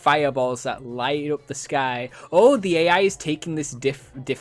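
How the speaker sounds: ordinary delivery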